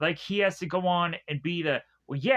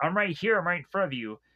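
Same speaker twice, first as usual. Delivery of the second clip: put-on desperate voice. Retelling a movie scene, the father begging the baby: imitating a desperate father. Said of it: "desperately wants this kid to just recognize him".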